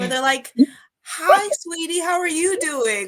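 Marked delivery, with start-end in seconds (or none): 1.0-3.1 put-on very high, syrupy, sugary talking-down baby-talk tone. Acting out people who talk to you as if you were two, in a Disney voice. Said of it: "what I call like Disney voice".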